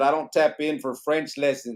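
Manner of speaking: plain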